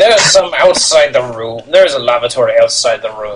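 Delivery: scornful, disdainful, contemptuous voice. Voicing the advisor answering a guest's bathroom question: contemptuous advisor voice. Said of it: "with contempt".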